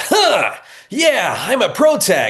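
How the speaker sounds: exaggerated old-school anime hero voice, very high, swooping. A performer showing how anime leads used to sound, old-school anime protagonist voice. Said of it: "it all used to be like the".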